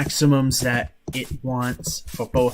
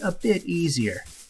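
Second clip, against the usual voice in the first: dripping, very sarcastic, pitched-up drawl; 5 semitones higher than usual. Weighing unplugging during a storm against an insurance claim: very sarcastic. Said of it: "and I say that very sarcastically".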